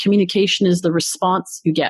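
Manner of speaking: ordinary talk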